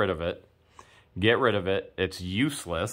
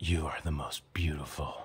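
low, deep, whispered smooth-talker voice. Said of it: "In, like, that deep voice".

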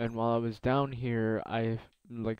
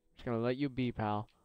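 ordinary talk

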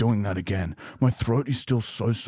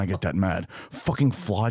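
usual speaking voice

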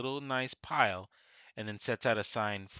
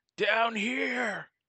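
orc yelling, higher and louder; 12 semitones higher, 5 dB louder than usual. Voicing an orc calling the other orcs: orc screaming. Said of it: "he screams out".

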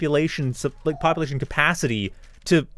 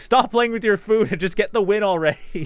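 put-on, pitched-up, screaming commentator voice; 5 semitones higher than usual. Retelling telling a player to stop playing with his food: imitating commentator screaming. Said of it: "like, commentator screaming at San".

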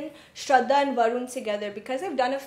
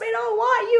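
put-on scream, higher and louder; 11 semitones higher, 6 dB louder than usual. Retelling what a casting director shouted: imitating someone shouting. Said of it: "She was shouting".

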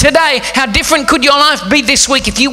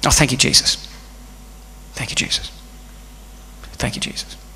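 put-on under-the-breath mutter, much quieter; 13 semitones lower, 12 dB quieter than usual. Recalling a staff member's constant habit at meetings, imitating muttering under his breath. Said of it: "constantly say under his breath".

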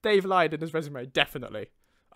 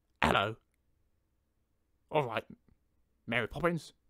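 exaggerated put-on Cockney, sore throat; 2 semitones lower than usual.

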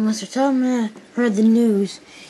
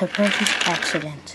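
plain

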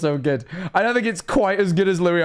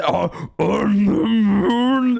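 put-on strained voice, stifled laughter held in; 3 semitones higher than usual. Imitating a voice in a clip straining not to laugh: imitating a strained voice holding in laughter. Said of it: "you can hear he's struggling to, like, not laugh".

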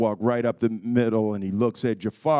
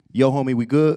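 American street slang dialect delivery; 2 semitones higher, 5 dB louder than usual. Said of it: "I can do it in Ebonic".

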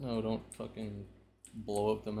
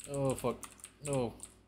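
caught off guard, panicking exclamation; 4 semitones higher, 4 dB louder than usual. Streamer reacting mid-game, panicking. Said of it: "I'm panicking".

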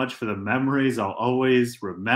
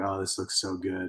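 soft, half-whispered aside spoken to oneself; 5 semitones lower, 7 dB quieter than usual. Imitating a friend drunk-cooking a quesadilla: imitating someone half-whispering to themselves. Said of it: "whispering to yourself".

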